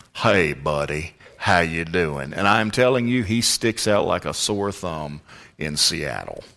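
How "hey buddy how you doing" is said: put-on Alabama accent. Describing a college buddy now pastoring near Seattle, the speaker imitates how his friend talks. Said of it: "he talks like this".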